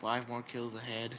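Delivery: mock very low, slow, bored droning announcer voice. Imitating the game's announcer, who sounds bored: imitating a bored announcer. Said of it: "just sound like the most bored guy at work ever".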